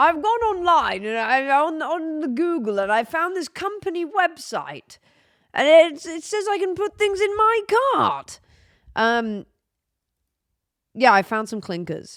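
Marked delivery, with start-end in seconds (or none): 0.0-8.4 put-on elderly voice, pitched higher than normal. Describing finding a shop website online: mock old person explaining. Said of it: "Why do I sound like an old person explaining something?".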